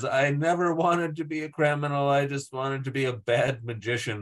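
mock sobbing, tearful, crying voice. Retelling a scene where a character starts crying: imitating a character crying. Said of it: "she starts crying and says".

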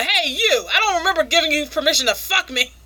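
play-acted, high, mild shouted scolding yell. Retelling a scene where she screams at him: imitating a scream. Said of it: "she's screaming at him".

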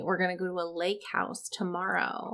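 softly spoken. Speaker chatting, choosing to say the next part more quietly; speaking more quietly. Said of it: "I'm going to say this more quietly".

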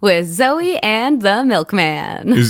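movie trailer or monster truck announcer voice. Radio co-host announcing the show's name: monster truck announcer voice. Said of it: "Is that your monster truck Mr. Movie voice".

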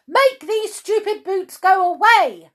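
shrill yell, very high and very loud. Reading a story aloud, voicing Miss Bossy as she calls to Wilfred, shouting. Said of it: "shouted Miss Bossy".

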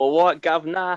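exaggerated Cockney accent. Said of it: "this is proper East London".

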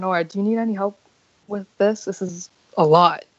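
whispered, hushed voice. Player character whispering to nora while paying a merchant: whispering. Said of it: "I'm going to whisper".

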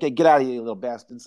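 rapid-fire, tossed-off gangster-style voice. Describing a gangster-possessed snowman talking to the kids, Frankie Vale mobster voice. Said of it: "He's like".

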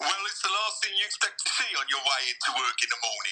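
speaking with Essex accent. Reading a quote aloud on request, in an Essex accent. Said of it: "I want to hear your Essex accent".

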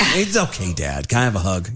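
put-on young child's voice. Retelling a talk with his eight-year-old son after yelling: imitating his kid. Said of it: "I'm like".

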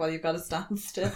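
unbothered, very calm, soft-spoken voice. Recapping a scene where Huey panics, retelling the reply as imitating calm Soldier Boy. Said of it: "very calmly like".

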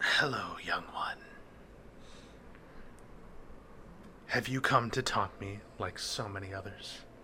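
whispery, airy, wispy creature voice. Game master voicing a bound tentacled creature: airy, wispy creature voice. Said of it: "Now it sounds more airy, wispy".

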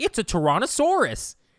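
very high, nerdy, know-it-all voice. Speaker mimics how he says Tyrannosaurus: nerdy imitation of him. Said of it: "he says it in such a nerd way".

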